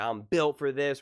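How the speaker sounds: loud, full-throated, celebratory screaming shout, acted out. Describing a player catching a pass for a touchdown, imitating him screaming. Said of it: "he like screams like".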